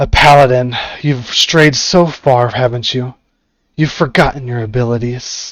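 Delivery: voice crackling like dry weeds. A narrator voices a woman greeting each visitor entering her tent, in a crackling voice. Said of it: "her voice crackles in the light dry weeds".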